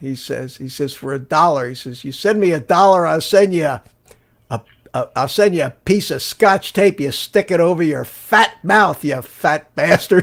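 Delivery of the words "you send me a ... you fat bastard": put-on loud, Brooklyn-accented New York guy voice. Quoting what a guy from New York says, Vinny's Brooklyn accent. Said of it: "the guy has a Brooklyn accent".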